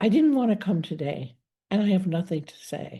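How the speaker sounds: solemn, serious, grave, matter-of-fact tone. Retelling what an old client said each week in therapy: imitating a client, serious and flat. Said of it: "with a very kind of serious, flat face".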